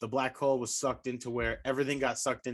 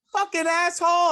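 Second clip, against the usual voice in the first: put-on very high little two-year-old voice; 10 dB louder than usual. Retelling what a two-year-old in the back seat repeated: imitating a two-year-old. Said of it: "my two-year-old in the back, goes".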